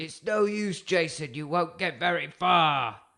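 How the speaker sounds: loud, high-pitched shout carrying across a distance. Recounting a villain's line as Jason runs away; retelling Doctor Storm's shout. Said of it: "he shouts".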